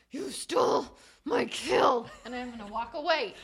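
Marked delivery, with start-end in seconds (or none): 0.1-2.0 very loud, slow, through clenched teeth. Still raging at another character, the speaker delivers the line through clenched teeth. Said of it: "I'm going to say through clenched teeth".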